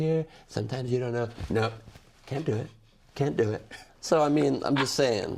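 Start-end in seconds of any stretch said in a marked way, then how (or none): 0.0-1.3 delivered entirely on one flat note. Mocking another comedian's one-note take on a politician: Alec Baldwin's Trump impression. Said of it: "He goes".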